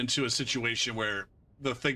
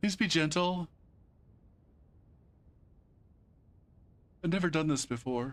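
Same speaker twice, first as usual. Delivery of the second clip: teasing, mocking, high put-on voice; 6 semitones higher than usual. Complaining that opponents got weak, imitating the other players. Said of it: "and they're just like".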